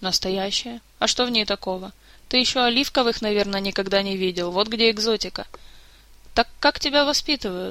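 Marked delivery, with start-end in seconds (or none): none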